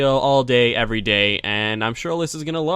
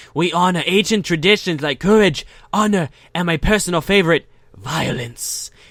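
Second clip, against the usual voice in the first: put-on, attempted Mexican or Spanish accent; 4 semitones higher than usual. Voicing a character's speech, in an attempted Mexican accent. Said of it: "I need to do this in like a Spanish or Mexican accent".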